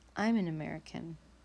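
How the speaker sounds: usual speaking voice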